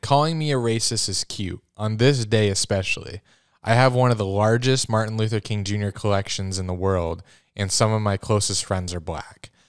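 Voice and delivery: ordinary talk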